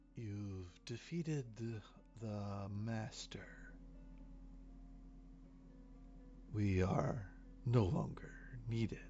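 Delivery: very quiet, hushed, hollow, empty voice. Narrating to the players, the storyteller voices the one remaining hooded figure: hollow, empty voice. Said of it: "he says in this really hollow, empty voice".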